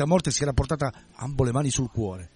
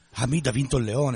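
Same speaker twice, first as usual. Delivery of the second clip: ordinary delivery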